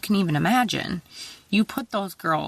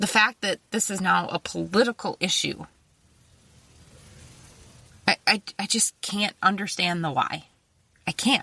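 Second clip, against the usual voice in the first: choked-up, halting speech, words catching with emotion. Someone in politics speaking out: choked up. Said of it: "I'm like choked up on my words here".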